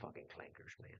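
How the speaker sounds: very quiet, hushed, conspiratorial whisper under the breath. Voicing a character who whispers at the listener: whispering. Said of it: "He kind of whispers at you".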